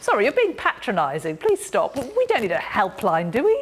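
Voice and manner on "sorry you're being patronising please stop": plain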